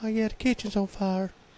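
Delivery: very high, soft-spoken, gentle voice. Retelling what she called to him from the kitchen, soft, gentle voice. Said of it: "soft, gentle voice".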